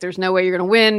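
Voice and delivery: normal talking voice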